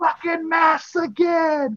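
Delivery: high, slow, belted-out shout. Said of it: "And he's like".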